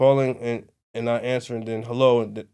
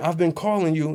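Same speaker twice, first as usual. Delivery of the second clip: put-on scream, higher; 6 semitones higher than usual. Retelling how a passenger screamed at the driver: imitating a passenger screaming. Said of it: "she's screaming".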